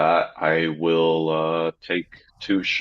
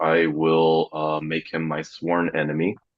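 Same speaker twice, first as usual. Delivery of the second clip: plain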